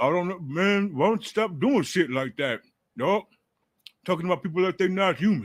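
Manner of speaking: muffled mumble through a full mouth. Retelling Javon Kinlaw's answer when asked about his problem with someone: imitating his mouthful. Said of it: "with a mouthful of something".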